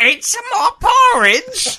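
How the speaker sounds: aggressive Cockney accent, very high, very loud, swooping. Showing a co-speaker what a Cockney accent really sounds like: Cockney accent. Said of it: "the Cockney is like".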